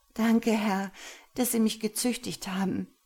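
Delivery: sighing delivery. She answers her master's question, sighing. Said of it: "seufzte sie".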